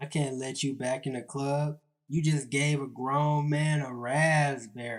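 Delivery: ordinary delivery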